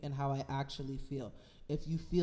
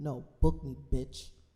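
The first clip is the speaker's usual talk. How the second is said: emphatic, punched delivery with real emphasis; 3 semitones lower, 6 dB louder than usual. Demanding to be booked rather than invited to the party: said with emphasis. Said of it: "I had to say that with emphasis in my voice".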